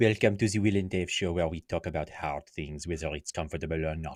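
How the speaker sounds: bad put-on French accent. Trying out a show intro in an intentionally bad french accent. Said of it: "it sounds like Steve Martin in".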